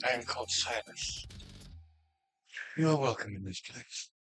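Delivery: quiet, hushed whisper. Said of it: "he speaks in a quiet whisper".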